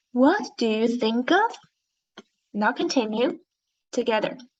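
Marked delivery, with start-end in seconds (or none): 0.1-1.5 rising, questioning tune on the final word "of". Leading a group read-aloud of a question, rising question intonation. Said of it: "read it with a rising tone".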